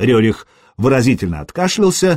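plain reading voice

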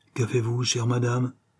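plain reading voice

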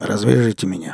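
ordinary delivery

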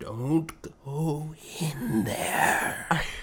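put-on hushed, creepy, spooky old gravedigger voice. Describing what another speaker's voice brings to mind, old movie gravedigger voice. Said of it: "the old gravedigger or whatever from like the cliched movies".

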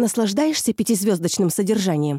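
plain reading voice

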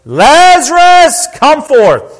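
loud, high, swooping commanding cry. Reading a Bible passage aloud, voicing the call to Lazarus: loud cry. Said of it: "he cried with a loud voice".

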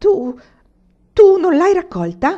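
shrill, very high, very loud shout. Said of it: "Gridò il mugnaio".

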